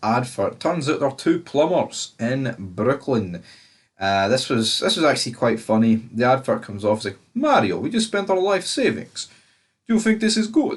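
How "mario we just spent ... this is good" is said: very high, swooping put-on Russian accent. Recapping a Super Mario Bros. advert, voicing one plumber: put-on Russian accent. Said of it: "I don't know why I'm doing Russian accent".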